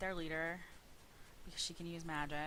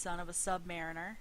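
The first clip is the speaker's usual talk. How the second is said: usual speaking voice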